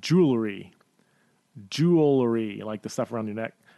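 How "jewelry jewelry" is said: deliberately slow, careful pronunciation. Showing a word that is hard to pronounce, said really slowly. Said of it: "I have to say it really slowly".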